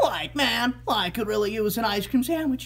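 high, loud cartoon voice, belted out. Asked by a viewer to do Eddy's voice, the speaker performs it: Eddy voice. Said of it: "could you do the voice of Eddy and other characters?".

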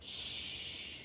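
very quiet, soft, barely voiced hushing whisper. Narrating a toy story, one toy hushes another before a meeting: whispered. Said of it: "Woody whispered".

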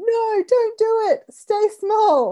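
very high, very slow, drawn-out screech. Speaker quotes a listener's text about their inner critic, imitating Muriel screaming. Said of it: "running around in my head screaming".

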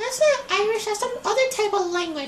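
very high, put-on offended squeal.

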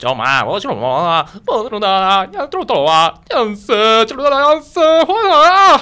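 put-on mock Chinese drama-style gibberish voice, nonsense syllables. Introduced to perform, doing a Water Margin mock-Chinese impression. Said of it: "中国人のモノマネ".

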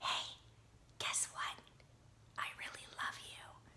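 soft, hushed, intimate whisper that draws listener in. Speaker demonstrates drawing in a lover while talking, in a whispery, quiet tone. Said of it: "this whispery, quiet tone".

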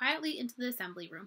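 plain reading voice

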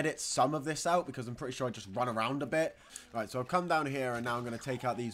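ordinary delivery, nothing marked

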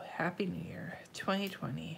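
soft, unvoiced whisper.

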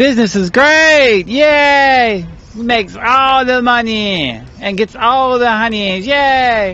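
over-eager, peppy, drawn-out enthusiastic cheer. Showing a tired man how he should sound about business: enthusiastic. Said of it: "I don't hear no enthusiasm. ... You gotta be like".

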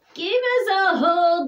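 lifted, calling cry. A character calls out to the sheep, crying out. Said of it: "cried Douglas".

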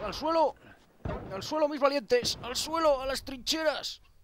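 rousing, commanding, sergeant-like rallying delivery.

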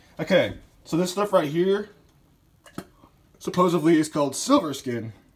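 voice cracking and breaking on a word. Showing how to trim the meat, the speaker's voice cracks. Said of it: "Ooh, voice crack".

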